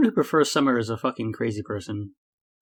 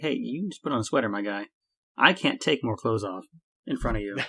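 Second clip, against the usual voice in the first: ordinary delivery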